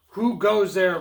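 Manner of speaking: loud, grumbling troll voice. Narrating the billy goat tale, the hungry troll challenges a goat: grumbling troll voice. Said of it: "Grumbled the hungry troll".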